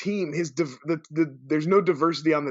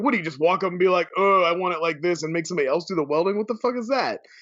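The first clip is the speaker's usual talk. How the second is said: normal talking voice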